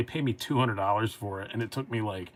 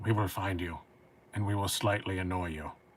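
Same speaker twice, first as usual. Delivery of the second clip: rough, gravelly voice throughout every word; 2 semitones lower, 3 dB quieter than usual. Showing how to do a Liam Neeson impression: gravelly Liam Neeson voice. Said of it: "it's more accurately".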